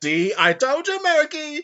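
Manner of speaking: very high, blaring, loud, put-on cartoon voice. Recalling an old cartoon and a character with a big nose: put-on cartoon character voice. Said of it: "I'm amazed I can still do that voice".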